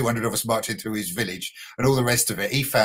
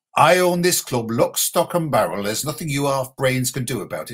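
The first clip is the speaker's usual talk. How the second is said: put-on northern English accent; 2 semitones higher, 3 dB louder than usual. A Brighton fan retells what the club owner said to him, imitating Bill Archer. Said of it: "Sorry about the imitation, northern accent".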